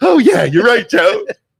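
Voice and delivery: very high, squeaky, lightly teasing voice. Imitating Kellen agreeing with Joe: impression of Kellen. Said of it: "That's your impression of Kellen?".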